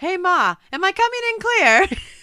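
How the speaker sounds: put-on loud, high Boston accent. Quoting the line a character says in a scene, boston accent. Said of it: "He like turns Bostonian".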